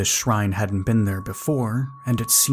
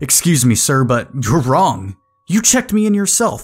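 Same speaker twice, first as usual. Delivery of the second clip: frustrated, raised voice, rising in pitch; 3 semitones higher, 7 dB louder than usual. Narrating a story, a guest argues with the man who checked them in, raised voice in frustration. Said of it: "raised my voice in frustration".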